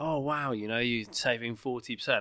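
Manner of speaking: usual speaking voice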